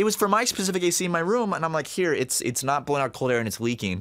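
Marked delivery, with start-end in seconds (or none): none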